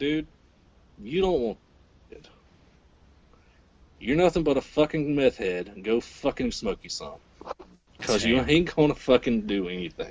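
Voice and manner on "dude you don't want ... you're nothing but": plain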